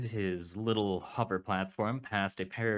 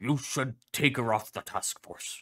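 said angrily; 3 semitones higher than usual. Narrator voicing the dog professor speaking to Clef: angry Crow voice. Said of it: "You want a suit? The dog asked. Are you sure? [name] is gonna need it, [name] said. Especially if the Coalition starts stepping up their efforts. Professor Kane Pathos [name] gave a low, angry growl. He slapped his front paw".

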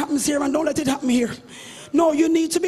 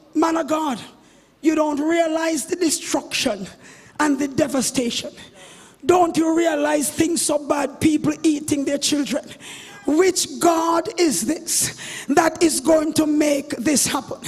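ordinary talk

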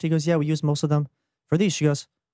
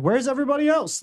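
put-on grumpy old man voice, high, angry yelling; 9 semitones higher than usual. Retelling an eighty-year-old man at the post office: imitating an old man yelling. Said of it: "yelling at the front of the line".

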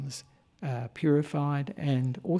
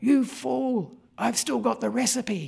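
put-on high, rough, rasping shout; 8 semitones higher than usual. Retelling a story of shouting up at an eagle: retelling a shout. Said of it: "shouted out".

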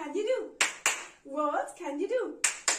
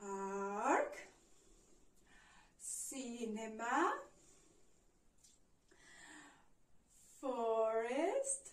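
drawn-out slow pace, lower and quieter; 7 semitones lower, 8 dB quieter than usual. Showing learners how to say the places: very slow. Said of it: "but very, very slow".

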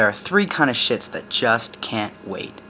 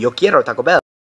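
loud shout in a fake Mexican accent; 7 dB louder than usual. Someone in the crew with the munchies shouts, in a fake Mexican Chihuahua accent. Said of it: "puts on their best fake Mexican Chihuahua accent and shouts".

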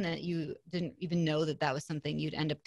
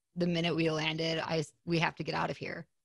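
ordinary delivery

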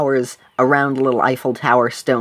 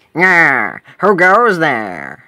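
swooping goblin creature voice; 3 semitones higher, 4 dB louder than usual. A game narrator voices a goblin calling from a tree, goblin voice. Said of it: "you hear a goblin's voice".

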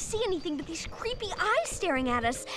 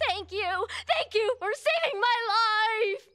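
calling out at full voice, shouting. Thanking the bike's rider for saving her life, shouting. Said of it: "you don't have to shout anymore!".

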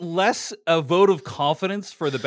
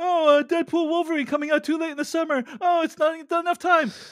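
mocking, very high-pitched parody; 10 semitones higher than usual. Mocking the other panelists' worry about a summer release: mocking impression of the other panelists. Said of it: "let me do an impression of half of you".

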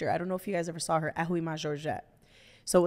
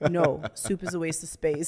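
put-on deadpan, straight-faced delivery. Retelling how a straight-faced brother answered his wife's question: imitating a deadpan reply. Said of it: "straight face kind of thing".

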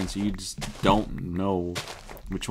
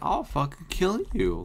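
voice cracking upward partway through; 8 semitones higher than usual. Gamer talking to a slime while recording: voice cracking. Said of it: "my voice just cracked there".

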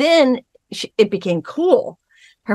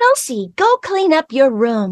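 put-on doll voice, slower; 5 semitones higher than usual. Imagining Barbie as the mother telling Kelsey to clean her room, Barbie doll voice. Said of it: "Did you do the voice right there?".

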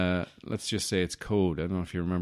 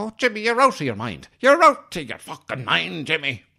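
very high, very loud, swooping fake Irish accent; 10 semitones higher, 10 dB louder than usual. Retelling a movie character's line, American doing an Irish accent. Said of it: "American person doing an Irish accent thing".

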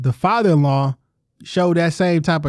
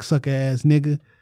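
imitated mumble, muttered under breath. Retelling what an ex's brother said under his breath: imitating a mumble. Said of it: "mumbled under his breath to me".

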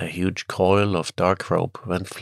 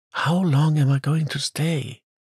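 anxious whisper, higher, slower; 8 semitones higher than usual. A girl holding her departing father's coat asks him, anxious whisper. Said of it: "She whispered anxiously".

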